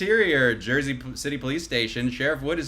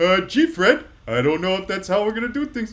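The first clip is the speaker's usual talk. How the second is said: goofy, dopey, high and loud cartoon sidekick voice; 6 semitones higher, 6 dB louder than usual. Another speaker asks for Barney Rubble, and the speaker answers in Barney Rubble voice. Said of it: "Can I get a Zorn button on Barney Rubble?".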